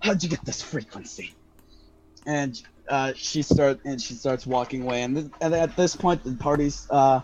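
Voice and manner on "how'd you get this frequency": rough, gruff, hushed whisper. Voicing a character who whispers into her necklace: gruff whisper. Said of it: "sort of gruffly whispers in it".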